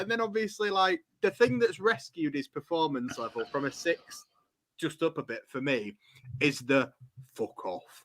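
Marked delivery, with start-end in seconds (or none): 7.3-8.0 ridiculously deep, very low, soft voice. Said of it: "done in that kind of voice".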